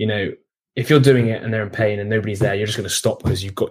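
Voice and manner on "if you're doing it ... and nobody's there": ordinary talk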